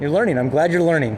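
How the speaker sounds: ordinary talk, nothing marked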